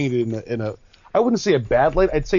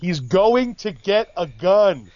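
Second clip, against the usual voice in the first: put-on, mild, high, very slow drawn-out call; 5 semitones higher than usual. Telling how they couldn't help yelling at the screen, retelling a yell at the screen. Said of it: "I yelled out the screen".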